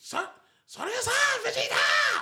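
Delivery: put-on high, loud child voice shouting.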